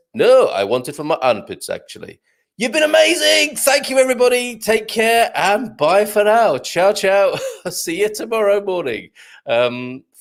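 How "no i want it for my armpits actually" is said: comic put-on Swedish accent. Telling a joke's punchline as the swedish customer, swedish accent. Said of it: "the Swedish fella says".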